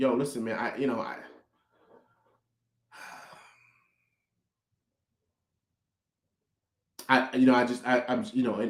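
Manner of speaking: stammering, halting, tripping over words. Reacting to a team's problems while struggling for the right words: stuttering, searching for words. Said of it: "I'm sitting here stuttering".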